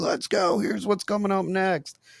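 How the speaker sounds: shrill, high, screaming, hyped arena announcer voice. Describing the announcer at Monster Jam; imitating a screaming announcer. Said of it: "an announcer on there like screaming like".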